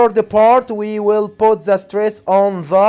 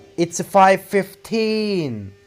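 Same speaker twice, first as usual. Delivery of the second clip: put-on fifteen, stress falling on teen; 4 dB quieter than usual. English lesson on saying times, stress on teen in fifteen. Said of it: "You have to put the stress on teen".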